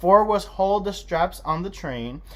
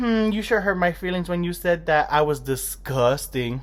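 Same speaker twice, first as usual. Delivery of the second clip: ordinary talk, nothing marked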